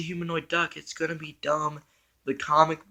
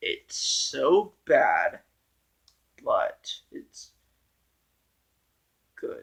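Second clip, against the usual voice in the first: quiet, slow, unhurried, hushed speech; 3 semitones lower than usual. Giving a verdict on a movie, talking slow and quiet. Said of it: "why I'm talking slow and quiet".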